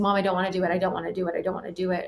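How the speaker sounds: put-on crying while talking, tearful voice. Retelling going to mom as a child, imitating crying while talking. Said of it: "coming to me crying".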